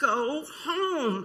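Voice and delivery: loudest classroom teacher voice, shouting. Speaker retells yelling at the dogs during the attack: retelling a loud teacher yell. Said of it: "in my loudest teacher voice".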